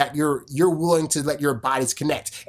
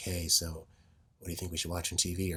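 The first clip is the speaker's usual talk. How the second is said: soft, very hushed half-whisper, close to the ear; 10 semitones lower, 14 dB quieter than usual. Showing how to speak softly into a partner's ear: soft half-whispered speaking. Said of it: "kinda talking like this".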